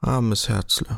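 low murmur under the breath. Narrator reading Frau Behold as she takes Kaspar's hand, murmuring. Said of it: "murmelte sie".

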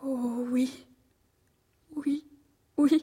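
weeping, slow, words drawn out. Answering someone who asks whether anyone has hurt her: crying. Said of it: "ne pleurez pas ainsi".

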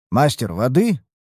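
ordinary talk

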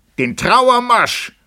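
very high, piercing, loud yell. Narrating a story, Benkjö answers a cry that the heir is murdered: shouted. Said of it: "schrie Benkjö".

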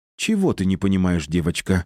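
ordinary delivery

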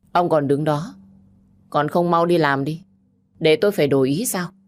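icy, cold, detached. Nghị Thành brushes off the woman's hand and speaks to director Tài; coldly. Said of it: "lạnh lùng nói".

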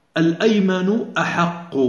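normal talking voice

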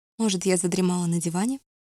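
plain

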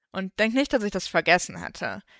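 ordinary delivery

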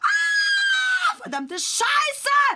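frantic, drawn-out swearing, very high and loud. Talking about his work, the speaker suddenly breaks off: freaking out, cursing. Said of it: "Jetzt bin ich irgendwie am Durchdrehen".

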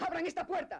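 very high, loud shouting voice. A character who has been locked in calls out to the people holding him, shouting. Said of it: "no grites".

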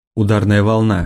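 ordinary delivery

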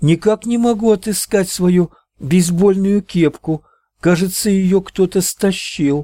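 very high, loud shout, calling out. Natalie, stepping onto the road, calls out to her mother. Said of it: "она крикнула матери".

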